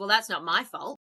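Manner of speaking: put-on grumpy old woman voice. Retelling what the woman at the supermarket replied: imitating a grumpy old woman. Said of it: "she sounded like a grumpy old man, a grumpy old woman when I just said that".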